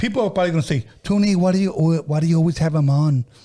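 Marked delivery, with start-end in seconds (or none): 1.0-3.2 mock soft bassless voice, higher and slower. A host mimics critics asking about his guest, mocking a soft voice with no bass. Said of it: "I use that voice because that's the voice you guys use".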